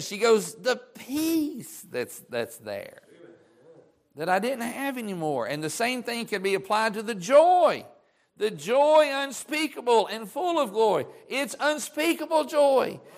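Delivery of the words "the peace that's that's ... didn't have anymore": mock hushed, choked-up, wavering voice, welling up. Retelling a church member's testimony about peace, imitating her choked up. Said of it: "she gets a little choked up".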